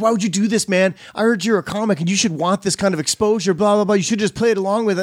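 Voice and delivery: mock heated, angry yelling rant. Retelling what a man who got pissed off said: imitating someone yelling angrily. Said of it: "he yelled at me".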